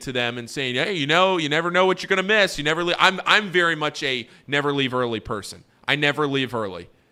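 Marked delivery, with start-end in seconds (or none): 0.8-3.0 playful, joking, teasing holler, high and quick. Recalling kidding with fans leaving the game early, retelling a joking scream. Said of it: "I'm screaming at all these fans".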